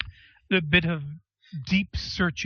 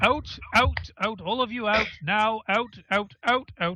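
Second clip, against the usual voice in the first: high, repeated shouting over everyone. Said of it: "He'll just keep shouting it over top of Rain".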